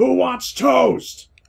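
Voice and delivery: high, slow drawn-out yell. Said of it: "And Marcus yells out".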